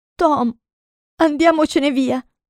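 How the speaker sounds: shaky, quavering, high-pitched, trembling voice. Narrating, Huck stares at the mystic sign and speaks to Tom in a trembling voice. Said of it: "disse con voce tremante".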